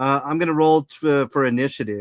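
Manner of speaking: ordinary delivery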